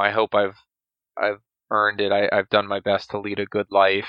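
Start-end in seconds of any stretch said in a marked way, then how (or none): none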